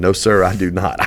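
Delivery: ordinary delivery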